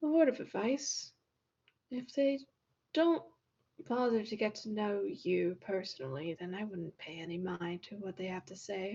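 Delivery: soft, quiet muttered aside. Walking across the room, one character speaks to another, muttering. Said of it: "kinda does, like, mutter to".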